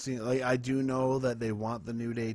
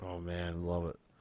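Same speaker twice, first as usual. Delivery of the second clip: sarcastic tone, lower and quieter; 4 semitones lower, 6 dB quieter than usual. Reacting to something just heard during the show: sarcastic.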